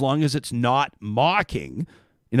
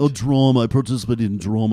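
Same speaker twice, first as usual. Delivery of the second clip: grandly pompous, self-important, self-serious voice; 3 semitones lower than usual. Imitating the other speaker talking about drama: imitating a self-serious person. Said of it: "a very s-, person taking themselves very seriously".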